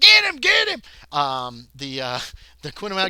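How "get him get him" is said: shrieking screams, much higher and louder. Narrating a chase, voicing the men running behind someone, screaming. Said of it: "are screaming like".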